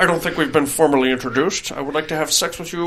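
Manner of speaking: put-on voice talking through clenched layers of teeth. Acting out how she introduced herself to him, talking through three layers of teeth. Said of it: "talking through three layers of teeth".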